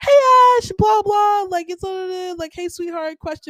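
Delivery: calm, nice, respectful tone. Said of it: "a calm and nice, respectful tone".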